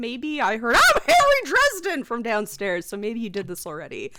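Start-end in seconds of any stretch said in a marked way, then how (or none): 0.7-2.0 very high, loud, shrill, mocking teasing put-on voice. Imitating the other player's introduction overheard from downstairs: imitating Harry Dresden's player.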